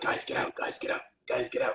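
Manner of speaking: put-on attempted whisper. Retell how the guy who had you in the ring told you to leave, imitating someone trying to whisper. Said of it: "he's trying to whisper like".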